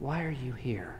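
half-whispery, hushed, very soft and quiet. Speaker retelling the Elijah story quotes God asking him, in a half-whispery voice. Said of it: "And in this whispery voice".

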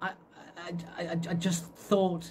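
stammered words. Joe, asked by Lauren what he is doing in front of the grubs, stammering. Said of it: "he stammered".

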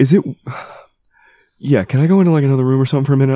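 voice strained, on the verge of tears. Asking in character to leave for another room: holding back tears. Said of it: "I'm about to cry".

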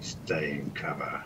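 grunted, whispery, breathy voice. Playing a character telling an ally to stay hidden: grunting in character. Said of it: "grunt to Bron".

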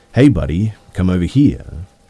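insistent high, loud demanding yell. Retelling a stranger calling out at night: imitating a demanding tone. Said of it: "in a sort of demanding tone".

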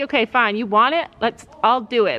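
usual speaking voice

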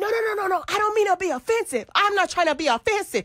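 clumsy, fake put-on Spanish accent. Retelling how a guy tried to do the accent, in a put-on Spanish accent. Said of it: "trying to get the accent".

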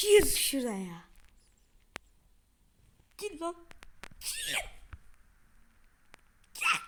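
loud, angry, furious, fed-up, frustrated, repeated words. Struggling through a hard game level, furious with frustration. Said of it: "Sinirden çıldırıyorum burada".

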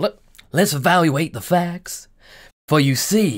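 slow, muddled put-on accent sliding toward Southern. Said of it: "I'm getting my accents mixed up".

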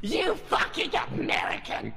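put-on shout.

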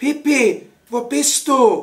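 very slow, high, anxious, drawn-out calling voice. He calls out for Pippi, who gives no answer: calling anxiously. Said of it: "Rief er ängstlich".

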